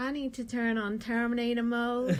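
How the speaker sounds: put-on sad, flat robot voice. Asked to say her line in the voice, imitating Sam's robot voice. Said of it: "Can you say that in the voice, please?".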